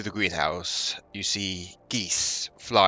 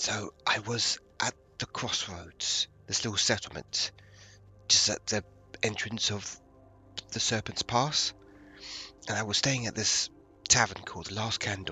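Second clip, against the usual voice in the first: whispering in a hushed voice; 3 semitones higher, 3 dB quieter than usual. Telling the story after someone says to keep it down: whispering. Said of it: "I have to whisper now".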